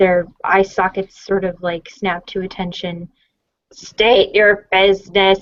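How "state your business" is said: loud, raspy, grating mechanical droid voice. A droid addresses the visitor approaching it: deep, raspy, mechanical droid voice. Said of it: "like deep, raspy, mechanical voice comes out of one of the droids".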